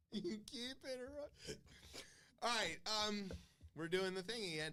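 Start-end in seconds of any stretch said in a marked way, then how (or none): 0.1-1.5 timid, meek, high little voice. Repeating an earlier line after the co-host recalls it: imitating a meek voice. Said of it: "the meekness from the "You keep interrupting."".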